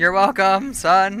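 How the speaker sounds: voice breaks partway. After explaining umbilical docking, addressing someone as son, voice cracking. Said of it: "I don't know why my voice just broke there".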